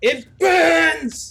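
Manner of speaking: high, loud pained scream. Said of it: "once again he screams out".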